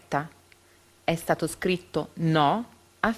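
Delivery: plain reading voice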